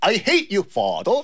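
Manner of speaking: put-on British accent. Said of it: "영국식 발음이니까".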